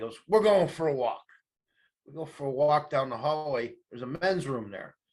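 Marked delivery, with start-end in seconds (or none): 0.3-1.2 put-on craggy big-man voice, louder. Retelling a merit board visit, quoting the big guy who led him away, craggy voice. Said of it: "big guy, craggy voice".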